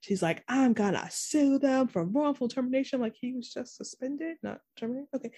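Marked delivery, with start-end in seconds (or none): 0.5-3.0 mock furious, ranting outburst. Retelling a character's scene: imitating Cecile super pissed off. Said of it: "super pissed off".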